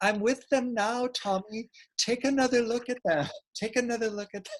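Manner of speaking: put-on high-pitched old woman's Irish brogue. The speaker voices what he hears his grandma saying, imitating his grandma's irish brogue. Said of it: "I love your imitation of your grandma's voice".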